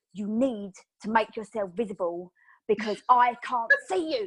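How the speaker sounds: play-acted angry, insistent, demanding tone. Retelling leaning across the table at the girl: retelling an angry demand. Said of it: "I got really angry".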